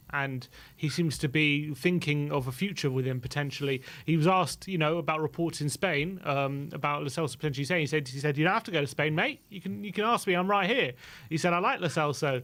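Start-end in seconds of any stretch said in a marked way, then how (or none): 8.3-10.9 imitated Australian accent. Retelling how a player answered a question about staying abroad, with an imitation of an australian accent. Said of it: "good attempt of an Australian accent there with the mate".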